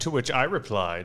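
affected, pretentious, hoity-toity la-di-da voice. Showing how someone says the phrase: pretentious voice. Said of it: "in a very pretentious way".

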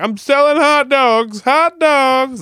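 very high, very slow, drawn-out vendor's holler. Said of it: "yell out that window".

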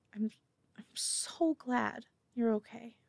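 slow, very soft, barely audible, close whisper. Telling how a woman hugs you tight before leaving, whispering. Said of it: "squeezes you tight and just whispers".

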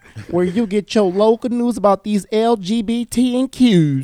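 attempted country accent. Opening the Queer LBC podcast, introducing the show in a country accent. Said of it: "supposed to be in a, um a country accent".

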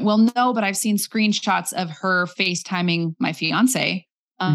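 ordinary talk

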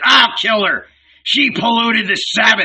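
shrill, very high-pitched roaring bellow. Narrator voicing Barabbas as he stamps on the fallen woman, bellowing. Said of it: "he bellowed".

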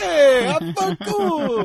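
very loud, high, drawn-out put-on Italian accent. Retelling walking out after oiling hair: put-on Italian accent. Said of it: "with Italian accents".

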